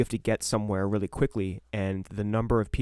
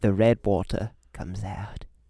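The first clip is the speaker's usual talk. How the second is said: put-on cockney accent. Imitating the Salad Fingers character: cockney voice. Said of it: "Getting all a little bit cockney".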